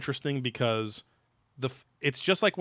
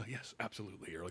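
put-on uneasy, awkward, very hushed delivery; 5 semitones lower, 17 dB quieter than usual. Retelling how a guy answers while agreeing: imitating an awkward guy. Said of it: "the guy is still kind of awkward".

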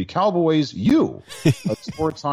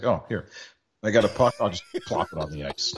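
acted baffled, scornful voice with swooping pitch; 5 semitones lower, 4 dB quieter than usual. Retelling a clumsy puck drop, imitating someone confused and disdainful. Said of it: "the confusion and disdain in his face".

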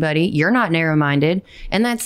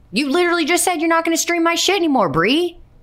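very high, worked-up, passionate, heated outburst; 10 semitones higher than usual. Reacting to a message read aloud: passionate outburst. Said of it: "I did not mean to be that passionate".

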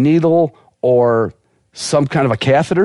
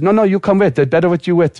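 high, bad female Russian accent. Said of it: "as best I can do for a female Russian accent".

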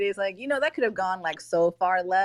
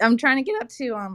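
nervous voice that cracks and breaks; 3 semitones higher, 4 dB louder than usual. Thanking others for sharing a link, nervous voice cracking. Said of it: "oh, my voice cracked 'cause I'm so nervous".

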